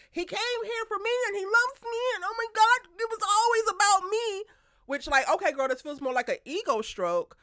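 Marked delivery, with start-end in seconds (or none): 0.1-4.4 screaming outburst, very high pitch. Retelling a character's outburst in a show's season: imitating someone screaming. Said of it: "And now you screaming".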